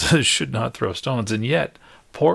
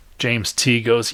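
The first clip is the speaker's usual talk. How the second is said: ordinary talk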